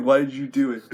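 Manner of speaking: ordinary talk, nothing marked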